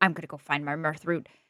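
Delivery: very low, quiet muttering mumble. Voicing a character who runs off up the stairs: mumbling. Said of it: "runs up the stairs mumbling".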